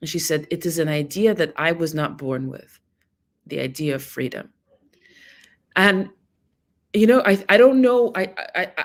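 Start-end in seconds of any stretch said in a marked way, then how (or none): 0.5-4.5 put-on thick, heavy Russian accent. Quoting what a woman said, in her thick Russian accent. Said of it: "in her thick Russian accent".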